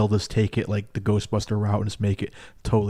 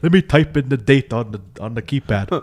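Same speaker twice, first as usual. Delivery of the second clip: cartoon vampire voice, louder; 4 semitones higher, 6 dB louder than usual. Retelling a movie scene, imitating the Doc character in a Count Chocula voice. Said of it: "He sounds like Count Chocula to me".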